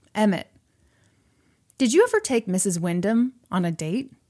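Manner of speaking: ordinary talk, nothing marked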